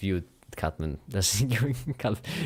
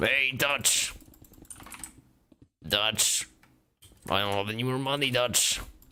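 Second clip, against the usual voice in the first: put-on sort-of American accent, loose and rough; 4 semitones higher than usual. Telling a companion there is no more money: kind of an american accent. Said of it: "Kind of an American accent".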